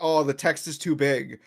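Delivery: ordinary delivery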